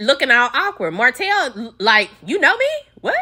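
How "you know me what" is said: play-acted, very high, startled, shocked disbelief. Retelling a man's reaction to being recognized: imitating a shocked man.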